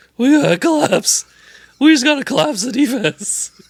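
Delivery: hoarse, raspy, very high-pitched, spent voice. Retelling a sideline interview with Nick Nurse: imitating Nick Nurse's hoarse voice. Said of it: "Nick also sounds like he's dying".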